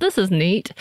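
dry, sarcastic tone.

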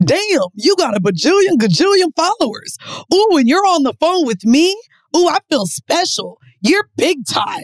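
put-on corny, impressed, lame and fawning sweet-talk. Retelling how a date reacted on a video call: imitating lame flattery. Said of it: "He immediately goes into the lamest shit of all".

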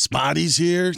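slightly raspy voice with a New York accent. Showing the others a Covino impersonation never done before: Covino impression. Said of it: "Does that sound like Covino at all?".

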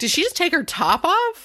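high, wide, shocked voice full of disbelief.

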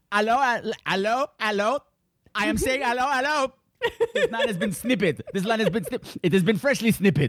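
put-on French accent laid on outrageously thick. Quoting a favorite film character's lines: Perrier's outrageous French accent. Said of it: "there's the outrageous French accent".

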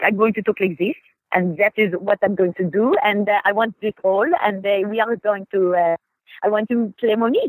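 put-on French accent. Retelling coming in to audition for a role: French accent. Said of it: "I came in with a French accent".

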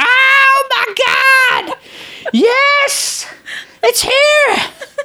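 put-on little-kid shriek, very high, drawn out. Speaker retelling jumping out of bed on seeing Kenshiro, screaming like a child. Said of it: "i screamed like a little child".

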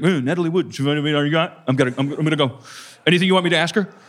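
fast cartoon bear character voice. Imitating how a friend would talk, in a Yogi Bear voice. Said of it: "Why am I Yogi Bear?".

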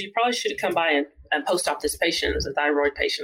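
ordinary delivery

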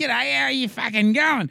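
loud, high-pitched rowdy bellowing yell. Describing a retired footballer as a larrikin: Mark Jackson impression, yelling. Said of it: "He fucking yelled".

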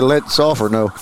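ordinary talk

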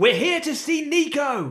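very high, full-volume, top-of-the-lungs shout. In a story scene, Capella struggles to her feet, shouting at the top of her voice. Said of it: "shout at the top of her voice".

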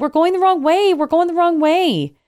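mock very high, shrill yell, repeated. Retelling a car chase, quoting own past words: imitating own yell. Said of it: "I yell".

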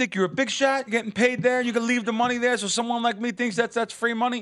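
put-on man screaming, very high-pitched. Retelling a stranger at a casino machine: imitating a man screaming. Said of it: "starts screaming at me".

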